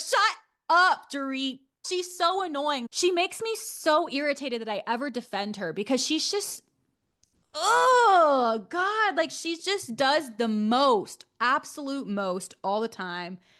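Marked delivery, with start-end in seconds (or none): 0.0-1.6 put-on yell, higher and louder. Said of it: "so loud".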